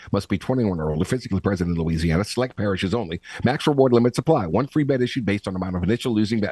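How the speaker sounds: rattled off very fast with no pauses. Sportsbook ad, reading out the eligibility terms: read very fast. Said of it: "here's where I read it fast".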